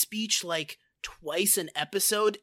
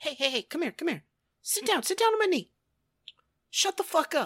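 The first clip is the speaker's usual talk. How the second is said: raised-pitch preachy delivery; 8 semitones higher than usual. Retelling how Andy lectures his kids this season: Andy impression. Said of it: "most of his lessons are like".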